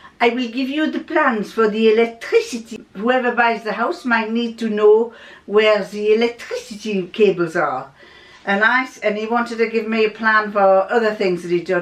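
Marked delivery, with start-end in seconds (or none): 0.2-7.9 put-on French accent. Retelling what a father said about the house plans: imitating father's french accent. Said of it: "in his French accent".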